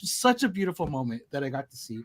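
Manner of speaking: quiet, teary voice, welling up, near tears. Recounting watching two kids pick a Barbie in the pink aisle, tearing up. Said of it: "like tearing up right now".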